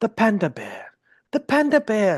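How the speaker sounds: put-on documentary narrator voice. Imitating a nature documentary narrator about animals: cool nature documentary accent. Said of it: "it's always with, like, a cool accent".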